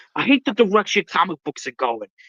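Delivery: put-on heavy New York accent, laid on, griping. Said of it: "the most New York ac-".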